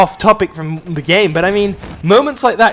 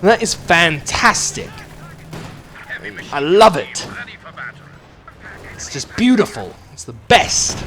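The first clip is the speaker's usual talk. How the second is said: over-emphasized words after theatrical, tongue-in-cheek pauses; 3 dB quieter than usual. Praising a tank charging an infantry unit, with mock-dramatic pauses. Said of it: "I'm emphasizing words with dramatic pauses before I say them. I'm taking the piss here".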